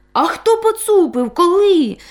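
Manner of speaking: scared, startled, high-pitched cry. A dog and a goat cry out together at the cat's news, frightened exclamation. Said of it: "злякано вигукнули разом Бобик та Козлик Буцик".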